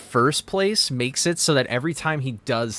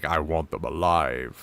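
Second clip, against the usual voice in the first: very low, deep, cold and dark voice; 8 semitones lower, 3 dB quieter than usual. Contrasting versions of a line, imitating James Earl Jones: cold darker voice. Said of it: "And then you hear James Earl Jones, and he's like".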